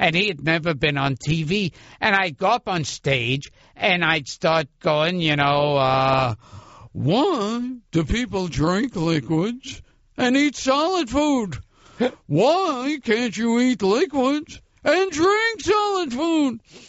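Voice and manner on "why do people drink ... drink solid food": each "why" stretched, pitch pushed way up. Retelling an early stage act, imitating Seinfeld. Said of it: "I started to do an imitation of him back then".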